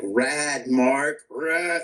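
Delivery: put-on exasperated, fed-up, frustrated tone. Retelling Rick's reaction to a shattered windshield: imitating frustrated Rick.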